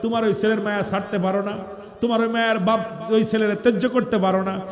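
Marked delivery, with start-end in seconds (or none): none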